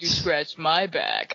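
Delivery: creepy, unsettling voice with unnerving inflection. Recalling what a mechanic once said to them, imitating a creepy mechanic. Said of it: "creeped out by the way he said it".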